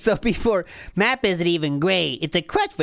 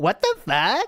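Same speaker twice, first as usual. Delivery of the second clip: put-on valley girl voice, teen-sounding, higher; 3 semitones higher than usual. Reading a chat message aloud: talking like a teenager. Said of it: "Why are we talking like a teenager?".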